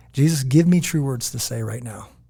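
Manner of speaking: ordinary delivery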